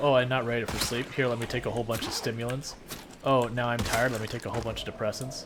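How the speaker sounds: ordinary talk, nothing marked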